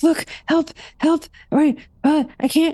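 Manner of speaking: very high, frantic, panicked yelling. Playing a character who sees something in her gums: panicked yelling for help. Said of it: "she's yelling for one of the roommates".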